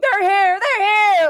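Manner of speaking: panicked, very high, very loud shrieking. A narrator voicing a were-rat in human form running over: screaming. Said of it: "like screaming".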